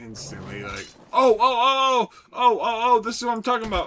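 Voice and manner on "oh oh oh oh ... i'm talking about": shrieking, very high, very loud excited yelling. Imagining a first-time viewer hearing the stream: pretend excited yelling. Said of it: "you hear me yelling".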